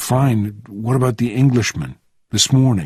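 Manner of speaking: ordinary delivery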